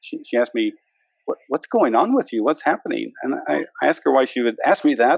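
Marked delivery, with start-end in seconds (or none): 1.5-3.1 put-on worried, concerned tone. Recalling his wife questioning him at the breakfast table, imitating a concerned voice. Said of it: "in a very concerned voice".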